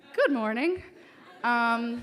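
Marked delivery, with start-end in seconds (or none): 0.2-0.9 very sweet, pitched-up, raised voice. Retelling replying to an uncle: imitating a sweet tone. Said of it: "as sweetly as I can".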